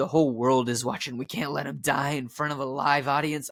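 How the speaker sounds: voice of a pack-a-day smoker. Retelling a movie scene, speaker voices one of the producers in a heavy smoker's voice. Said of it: "my producer kind of sounds like a smoker who has smoked like one too many packs of cigarettes".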